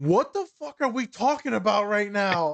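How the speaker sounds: sudden angry outburst. Retelling what Colin said when he rolled over at one in the morning: imitating Colin angry. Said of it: "I've never seen him angry".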